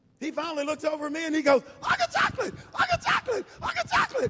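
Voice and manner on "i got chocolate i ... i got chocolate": play-acted very high, bouncing, excited, repeated screaming. Retelling a guy in a bathroom at night: imitating a man screaming. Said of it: "he just starts jumping and screaming".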